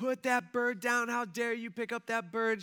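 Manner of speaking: put-on, furious, high, angry screaming yell. Retelling how a woman marched over and started yelling at them: imitating her angry screaming. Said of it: "she starts screaming and starts yelling".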